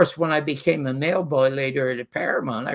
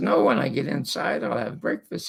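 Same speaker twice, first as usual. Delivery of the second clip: normal talking voice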